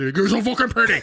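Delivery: intense, aggressive delivery. Showing how delivery changes a compliment, aggressive grab-by-the-lapel compliment. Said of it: "grab by the lapel".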